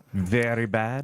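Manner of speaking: put-on Eastern European accent. Quoting a man who judged students' music theory assignments, imitating Eastern European accent. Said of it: "Eastern European".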